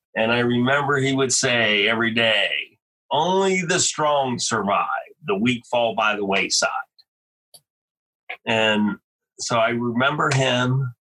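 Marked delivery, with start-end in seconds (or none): 3.1-6.7 evangelical preaching cadence. Retelling an airborne instructor's daily saying, imitating an evangelical preacher. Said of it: "he would talk like an evangelical preacher".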